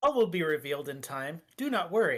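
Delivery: mechanical-sounding robotic voice. A little orb answers someone who has just woken up, in a robotic voice. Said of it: "speaks in a sort of robotic voice".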